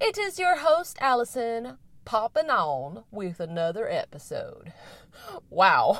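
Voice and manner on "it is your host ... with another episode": weird backwoods cowboy voice. Podcast host introducing her episode, in a weird hick cowboy accent. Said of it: "weird kind of hick cowboy accent".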